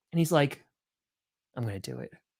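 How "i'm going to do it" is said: mumbling to oneself. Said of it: "the bald guy starts muttering to himself".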